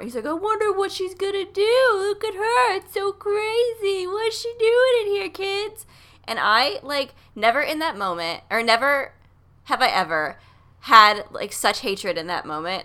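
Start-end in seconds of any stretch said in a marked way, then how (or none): 0.2-5.8 very high, shrill heckling holler. Retelling a man shouting over and over: imitating someone shouting. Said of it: "kept shouting over and over".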